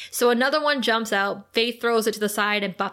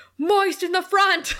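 shrill, high screaming; 8 semitones higher, 3 dB louder than usual. Retelling a villain screaming at his minion: imitating someone screaming. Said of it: "screaming at his minion".

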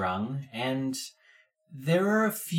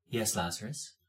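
very quietly spoken, soft voice; 4 semitones lower, 8 dB quieter than usual. Voicing a character answering through a ring after a pause: very quiet voice. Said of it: "and then very quietly".

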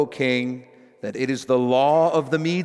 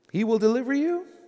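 statement said with a questioning tone; 8 semitones higher than usual. Preacher reading the king's words to Daniel in the den, quoting the king as a question. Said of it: "I say it like that because it wasn't really a statement ... as much as it was a question".

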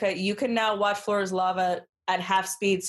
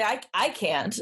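usual speaking voice

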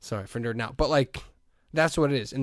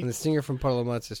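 ordinary talk, nothing marked

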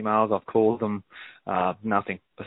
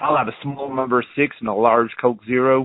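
put-on American accent. Ordering food at McDonald's in an American accent. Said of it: "I decided to order with an American accent, and I was like".

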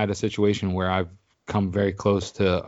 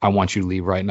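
plain

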